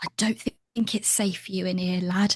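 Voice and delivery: speaking in a whisper. Playing a character who warns a companion it is unsafe: whispering. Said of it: "I'm gonna whisper to Crook".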